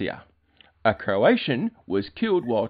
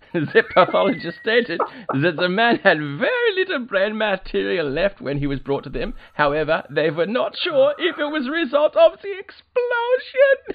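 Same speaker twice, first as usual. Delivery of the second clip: very high, swooping, very camp German accent; 10 semitones higher, 4 dB louder than usual.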